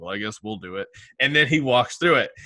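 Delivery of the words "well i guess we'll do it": mock flat monotone voice, much quieter. Speaker imitates a man opening a hard topic: monotone imitation. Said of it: "in his monotone voice goes".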